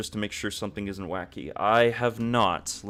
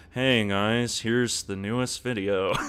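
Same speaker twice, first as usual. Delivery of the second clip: level, even, flat monotone delivery. Speaker shows how they sound on their videos, in a monotone video voice. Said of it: "a little bit more, um, I guess, monotone".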